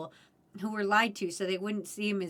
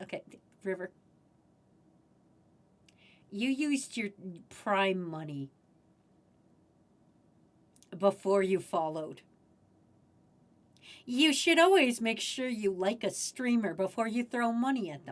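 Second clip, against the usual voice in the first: earnest, serious scolding, lecturing tone, half joking. A streamer calls a viewer over for a talking-to, mock-serious lecture. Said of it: "I need to talk seriously at you".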